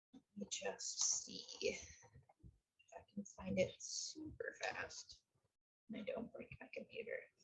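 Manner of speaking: soft whispered mutter.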